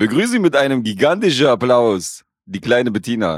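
fake Swabian dialect, put-on announcing voice. After someone calls 'Action,' delivering an announcement in a put-on Swabian accent. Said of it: "Schwäbisch ist das. Ein schwäbischer Akzent".

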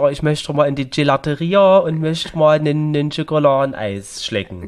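Saxon German accent. Imagining a woman from Plauen wanting ice cream in Rome: Saxon German accent. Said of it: "mit so einem sächsischen Akzent".

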